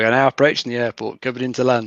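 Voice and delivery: ordinary delivery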